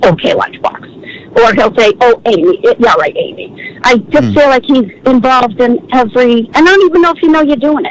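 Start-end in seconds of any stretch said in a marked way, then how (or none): 0.0-0.9 put-on mutter under the breath, lower pitched. Speaker complains Eddie comments whenever others speak, imitating Eddie muttering under breath. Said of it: "he under his breath goes".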